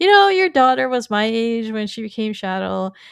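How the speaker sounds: ordinary talk, nothing marked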